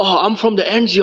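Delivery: loud, drawn-out London street accent. Friends comparing accents, mimicking someone from London, in a mocking London accent. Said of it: "who the fuck talks like that?".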